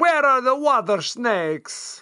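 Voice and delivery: put-on Italian accent, laid on thick. Recapping a film, the speaker mimics its characters: offensive Italian accent. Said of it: "That's my offensive Italian".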